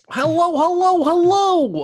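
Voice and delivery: very high, loud, animated cartoon dinosaur voice. Practicing voice acting skills, saying hello in a cartoon dinosaur voice. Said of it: "what are you, a cartoon dinosaur?".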